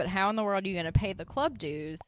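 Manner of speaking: ordinary talk, nothing marked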